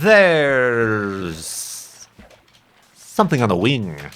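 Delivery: hammy, drawn-out, wild pitch swings, stretched "there's". Answering questions in the morning, doing a William Shatner impression. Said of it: "William Shatner. ... that was a terrible impression".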